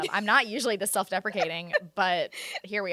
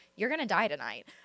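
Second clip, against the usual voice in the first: mock eerily calm tone. Retelling what they said to their spouse that night, eerily calm. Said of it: "I was like eerily calm".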